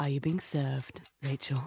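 sultry, suggestive, very erotic, seductive delivery. Voicing a character's line in an invented comedy scene: very erotic way. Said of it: "In a very erotic way".

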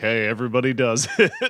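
mock, very friendly tone. Retelling a blackmail email's opening line: imitating a very friendly tone. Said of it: "the guy takes a very, like, friendly tone".

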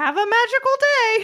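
squeaky voice pitched way up high. Joking about a hotel stay, the speaker does a Mickey Mouse voice. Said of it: "My Mickey Mouse is okay".

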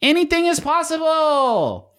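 high, slow, yelled commercial announcer delivery.

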